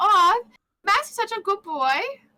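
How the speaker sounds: put-on very high-pitched German accent. Imagining what a friend says about Max: imitating Sumi's German accent. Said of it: "her German accent".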